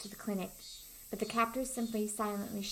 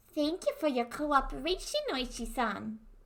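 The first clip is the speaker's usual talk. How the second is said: animated, high-pitched, put-on New York accent; 5 semitones higher, 4 dB louder than usual. Reading a character thanking oishi-san, new york accent. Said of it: "I don't know why I have the New York accent today".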